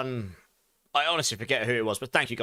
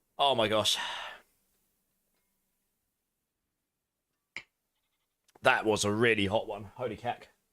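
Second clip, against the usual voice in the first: strained burning-throat voice, lower; 4 semitones lower than usual. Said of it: "Back of my throat is just on fire".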